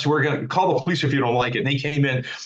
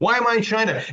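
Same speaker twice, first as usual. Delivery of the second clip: mock panicked scream, higher; 8 semitones higher than usual. Retelling waking up after surgery, thinking it was China: imitating own past screaming. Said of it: "I kept screaming".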